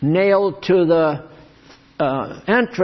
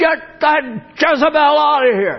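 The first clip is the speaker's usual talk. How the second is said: put-on high, yelling old-time preacher voice; 9 semitones higher than usual. Describing how old-time Pentecostal preachers acted in church: imitating a yelling old-time preacher. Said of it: "You think my yelling is something?".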